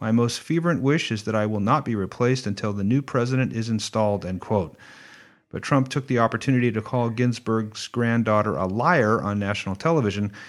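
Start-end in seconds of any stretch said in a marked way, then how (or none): none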